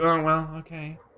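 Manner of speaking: cartoonish creature voice. Acting out a reaction to a movie casting: Stitch voice. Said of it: "I thought you were doing, like, a Stitch voice".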